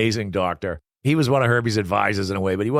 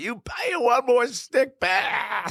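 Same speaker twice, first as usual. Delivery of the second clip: put-on, very high, drawn-out furious scream. Retelling how he screamed at the skaters in the dark, retelling a scream. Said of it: "he's screaming at them".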